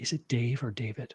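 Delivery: very kind, careful, soft, quiet voice. Acting out the calm people who always ask which name you use, imitating a kind, quiet voice. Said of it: "very kindly in a quiet voice".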